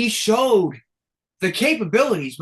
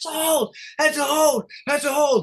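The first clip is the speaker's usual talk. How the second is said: acted exasperated scream, high, frustrated, repeated over and over; 9 semitones higher than usual. Recalling yelling at the TV and his buddy during a game, retelling his own screaming. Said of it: "I'm screaming at the T V".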